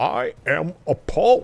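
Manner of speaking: put-on grand theatrical declamation, swooping high pitch. In a chat, the speaker tries a Patrick Stewart impression. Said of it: "That's the best Patrick Stewart I can do for you right now".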